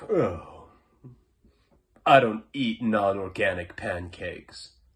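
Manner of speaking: put-on condescending, self-satisfied voice. Mocking a guy who always talked down to him, imitating a smug tone. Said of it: "he just always was like very smug".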